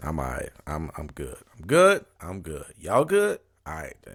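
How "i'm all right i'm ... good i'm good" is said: low, swooping voice, fighting off tears. Reassuring her listeners that she's all right, holding back tears. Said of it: "I don't want y'all to think I'm over here crying".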